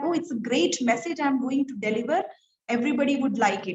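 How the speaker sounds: ordinary talk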